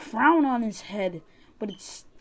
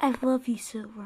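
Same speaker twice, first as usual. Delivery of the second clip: sultry put-on voice. Playing with friends, the speaker declares love to Silver in a sexy voice. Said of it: "This is my sexy voice".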